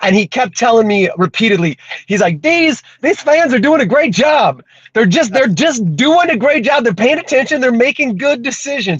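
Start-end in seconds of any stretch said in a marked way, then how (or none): 2.4-9.0 clumsy, terrible-sounding voice, pitched up. Retelling what the crew chief kept saying: terrible Jason Miller impression. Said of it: "I do a terrible impression".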